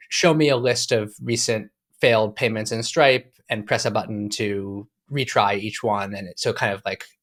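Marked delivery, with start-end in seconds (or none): none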